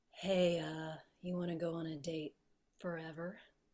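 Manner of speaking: very soft, airy, breathy voice with slight rasp. Asked by another speaker to do voices again, the speaker does a breathy, slightly raspy voice. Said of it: "the breathy with teeny bit of rasp".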